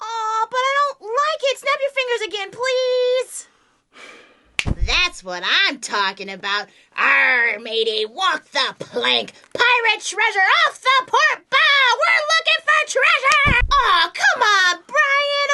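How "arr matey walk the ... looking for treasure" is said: swashbuckling put-on pirate voice. Acting as a pirate after the other snaps fingers: put-on pirate voice. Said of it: "A pirate would totally find buried treasure".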